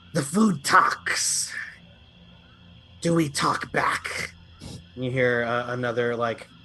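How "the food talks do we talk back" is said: reptilian lizard creature monster voice. Narrating creatures inching closer to the players, voice the nearest one in a lizard creature voice. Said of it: "The nearest one says".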